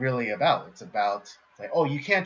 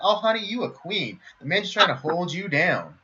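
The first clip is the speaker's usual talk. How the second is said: high-pitched snake character voice; 7 semitones higher than usual. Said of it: "The role of shall be played by [name]".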